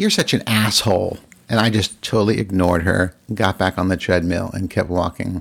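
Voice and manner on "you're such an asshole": mock mad, angry, cutting tone. Retelling a gym argument where a woman at the gym insulted them: imitating someone angry. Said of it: "And she got mad".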